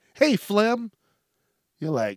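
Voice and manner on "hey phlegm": cheerful, friendly, happy, pitched-up voice. Showing that the word sounds bad even when greeted: said happily. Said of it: "even if you say it happy".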